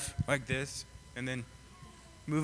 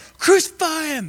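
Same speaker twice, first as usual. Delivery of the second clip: very high, loud screaming crowd. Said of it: "gonna be yelling and screaming like".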